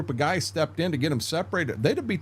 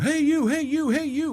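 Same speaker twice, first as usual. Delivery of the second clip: put-on drill-sergeant shouting, very high-pitched; 11 semitones higher than usual. Retelling a sergeant walking among recruits: imitating a sergeant yelling. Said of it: "he's yelling".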